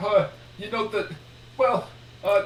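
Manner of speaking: high, flustered, stammering and stalling.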